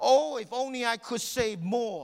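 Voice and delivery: high, loud, yelled-out cry. Retelling what a man yelled out after being told he did his best, retelling a yell. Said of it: "And then he yelled out".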